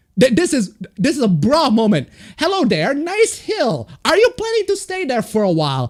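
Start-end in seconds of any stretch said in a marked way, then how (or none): 2.4-5.9 mock teasing sarcastic, swooping sing-song. Reading out an earlier reply to someone's tweet: retelling own sarcastic remark. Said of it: "I'm clearly being sarcastic right there".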